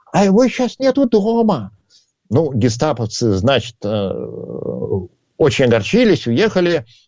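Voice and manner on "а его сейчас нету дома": very high put-on old-lady granny voice. Telling a joke, the speaker voices a spy answering the door in an old woman voice. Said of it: "притворившись старушкой".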